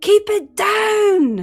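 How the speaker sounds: very high, very loud, drawn-out screaming yell. Voicing a man downstairs screaming at the player: man screaming. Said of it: "you hear a man scream".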